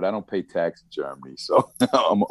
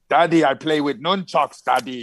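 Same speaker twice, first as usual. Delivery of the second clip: slight put-on Austrian accent, pitched up; 8 semitones higher than usual. Quoting his son, the speaker uses a slightly Schwarzenegger-ish accent. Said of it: "little Schwarzeneggerish".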